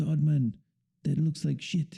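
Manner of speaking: put-on Peruvian accent. Recalling a man criticizing the speaker's color wheel, imitating a Peruvian accent. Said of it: "I don't know if that's like a good Peruvian accent".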